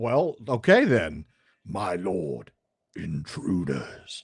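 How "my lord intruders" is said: low, put-on monster-style orc voice. Voicing a dwarf character and giving it an orc voice. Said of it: "I just gave the dwarf an orc voice".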